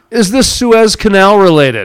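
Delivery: sarcastic, pointed, snarky reporter-style delivery. Putting on a snarky journalist hat in a conversation; snarky journalist tone. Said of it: "my snarky journalist hat".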